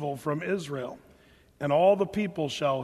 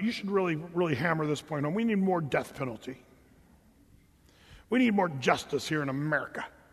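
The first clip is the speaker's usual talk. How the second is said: tongue-in-cheek, mocking put-on tone; 3 dB quieter than usual. Voicing what a listener might say to the speaker: mockingly voicing a listener. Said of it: "the reason I say that sort of mockingly".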